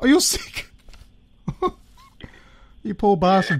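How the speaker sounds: laughing speech with swooping pitch. On a podcast phone call, answering someone who says he's been sick, laughing while talking. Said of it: "Sorry I'm laughing".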